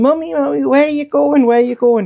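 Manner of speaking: put-on very high, shouting small boy voice. A mother recalls her three-year-old calling after her down the stairs; imitating Joseph shouting. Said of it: "he's shouting".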